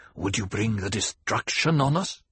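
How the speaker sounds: hissed, hissing voice. Reading a novel, voicing someone in the circle who nudges the main character, hissed. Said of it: "a voice hissed".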